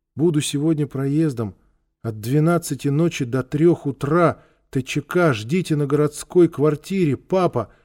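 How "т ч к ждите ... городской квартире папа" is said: plain reading voice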